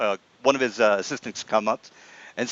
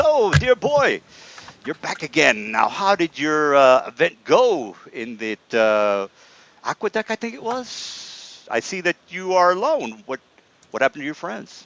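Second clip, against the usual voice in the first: swooping, wandering, absent-minded mage voice; 4 semitones higher than usual. Voicing the absent-minded mage greeting a returning adventurer: Mister Delphin voice. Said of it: "he kinda looks up and says".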